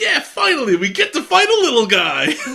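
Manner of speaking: play-acted overjoyed cheer, very high and very loud. Recalling a favorite episode line, imitating Terriermon mock-excited. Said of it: "he's so excited".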